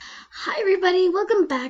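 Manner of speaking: cracking, breaking voice, high and loud. Opening a video and greeting viewers, voice cracking. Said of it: "Sorry, voice crack".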